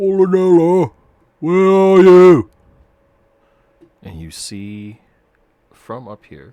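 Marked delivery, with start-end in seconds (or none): 0.0-2.5 very loud, very high, booming bellow. Voicing a distant cyclops calling out for polonella: booming shout. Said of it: "a booming voice shout out".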